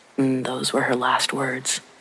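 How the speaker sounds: plain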